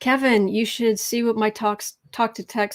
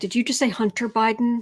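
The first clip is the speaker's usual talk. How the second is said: ordinary delivery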